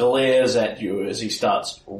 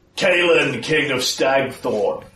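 bellowing out loudly; 3 semitones higher, 4 dB louder than usual. Game master voicing a character calling out to a player, bellowing. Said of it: "And bellows out".

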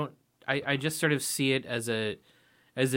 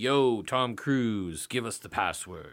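put-on slow, ceremonial old elder voice; 3 semitones lower than usual. Retelling a movie scene: imitating the old man in the red robe. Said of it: "he's all like".

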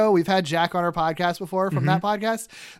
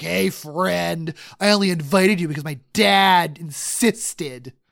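slow, hateful, spiteful drawl. Retelling how Harry greets Peter and MJ, in his very Harry way. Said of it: "in his very Harry way".

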